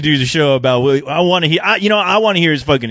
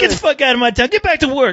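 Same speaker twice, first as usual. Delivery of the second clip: put-on, very high-pitched screaming; 9 semitones higher than usual. Acting out locals screaming at a newcomer: imitating someone screaming. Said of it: "they'll be screaming at you".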